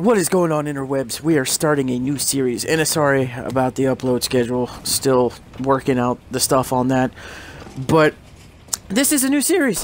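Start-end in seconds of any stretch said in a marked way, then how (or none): 8.9-9.8 high voice breaking partway through. Opening a video to announce a new series: voice cracking. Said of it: "My voice cracked".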